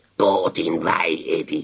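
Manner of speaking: slow, hollow snarl. Narrator reading a story, Dracula answering from his coffin, hollow snarl. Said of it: "snærrede Dracula hult".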